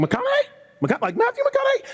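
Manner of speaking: very high, swooping, starstruck disbelief. Retelling answering a call from a famous caller: imitating own high-pitched voice. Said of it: "my voice gets high when I talk to famous people".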